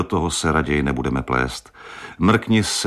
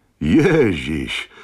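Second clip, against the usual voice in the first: joyful, glad, happy voice. A voice on the phone answers his call, joyful voice. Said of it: "zazněl mu do ucha radostný hlas".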